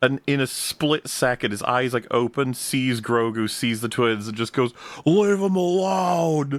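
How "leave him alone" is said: very high dude-bro voice, word drawn out. Recapping a show, speaker voices Jabba Junior telling the twins off: Jabba Junior's dude-bro accent. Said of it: "He's the dude, bro accent".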